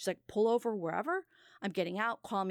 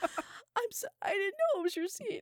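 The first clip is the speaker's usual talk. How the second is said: mock sobbing male voice, much higher and slower; 13 semitones higher than usual. Retelling how a man confronted him about a seat, imitating Bob sobbing. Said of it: "Bob just bursts into tears and is like".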